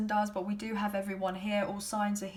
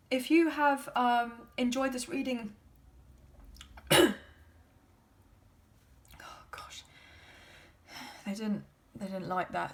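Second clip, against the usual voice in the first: voice cracking, going higher; 2 semitones higher than usual. Wrapping up a reading for viewers, voice cracking. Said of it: "my voice just completely went there".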